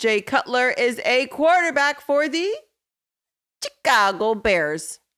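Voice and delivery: terrible put-on Chicago accent, drawn out. Explaining a reference in a show episode, in a terrible Chicago accent. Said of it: "It was a terrible Chicago accent".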